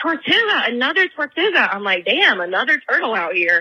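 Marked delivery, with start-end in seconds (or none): 0.0-1.7 mock thrilled, high, excited hollering. Telling of a boat outing where he stands up, retelling a scream. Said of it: "starts screaming".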